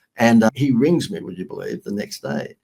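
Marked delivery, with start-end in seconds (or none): none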